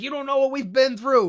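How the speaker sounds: high, loud, belted mock scream. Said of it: "screams about the streets".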